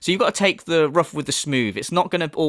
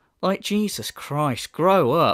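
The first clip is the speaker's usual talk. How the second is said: plain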